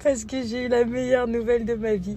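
crying with happiness. Speaking to her audience after getting news, crying with happiness. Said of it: "je pleure parce que je suis heureuse".

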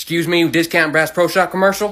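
usual speaking voice

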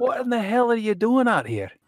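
put-on high-pitched, loud, hollering old man voice. In a role-play, [name] calls out to Jenna: [name], old man voice. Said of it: "old man".

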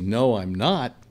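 very proud, prideful tone. Recount your younger self answering a woman who asked if you're married, retelling a very proud reply. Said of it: "very proudly".

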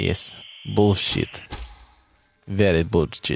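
put-on Russian accent on short phrases. Replying to the question about the Russian accent, echoing it in a Russian accent. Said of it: "How is my Russian accent?".

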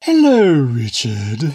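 affected, loud, swooping bookish literary voice. Greeting richard at the start of the show, in a put-on literature voice. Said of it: "he's got his literature voice on".

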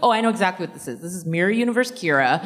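normal talking voice

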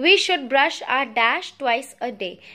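ordinary talk, nothing marked

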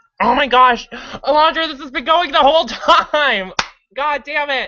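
very high, flustered, embarrassed exclamation. Streamer realizes the recording was running all along, embarrassed outburst. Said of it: "I'm so embarrassed!".

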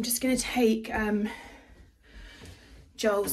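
breathless, winded, catching breath. Just after running up the stairs, talking to viewers, out of breath. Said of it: "I'm so out of breath".

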